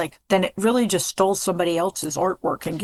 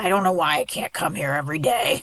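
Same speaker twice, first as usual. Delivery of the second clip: growled, grumbling delivery; 3 semitones lower than usual. Recounting what a former student said on his way out, imitating a growl. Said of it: "And he would growl on the way out".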